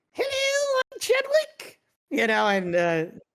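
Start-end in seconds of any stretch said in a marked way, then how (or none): 0.2-1.8 very high, small little voice. Speaker describing a puppet and doing its voice: high little Chadwick voice. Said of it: "he's got this little voice that's like".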